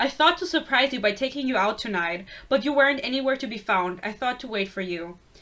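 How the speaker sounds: ordinary delivery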